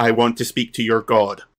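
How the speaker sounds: ordinary talk, nothing marked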